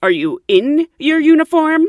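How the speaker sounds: very high, loud, shrill, condescending tone. Retelling what he said after looking the speaker up and down, mock-condescending. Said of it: "he says in a condescending voice".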